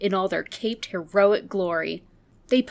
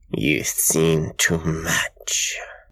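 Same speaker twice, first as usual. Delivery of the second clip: very deep, very low, slow, dragged-out growl; 3 dB louder than usual. A Martian menace advances on a trapped, pleading man: growled. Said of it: "growled the Martian menace".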